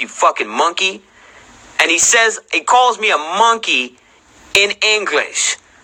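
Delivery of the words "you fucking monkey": put-on muttering under breath. Retelling an insult muttered back at him: imitating someone muttering under breath. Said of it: "mutters under his breath".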